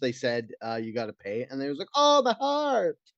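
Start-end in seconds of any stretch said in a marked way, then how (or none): 2.0-2.9 fake Italian accent, very high-pitched. Retelling a story about a man told he had to pay, in a put-on italian accent. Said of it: "I don't know why I had to give this guy Italian accent".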